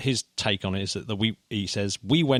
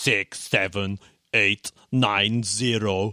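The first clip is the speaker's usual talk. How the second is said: German accent, drawn way out, slow and measured. Explaining a stepping memory test, speaker reads digits in a German accent. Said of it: "read out in a German accent digits".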